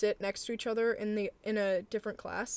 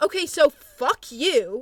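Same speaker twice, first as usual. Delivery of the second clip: high, very loud, slow, drawn-out angry yell; 5 semitones higher, 11 dB louder than usual. Retelling how someone yelled at the speaker in class: imitating someone yelling. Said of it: "and yells at me".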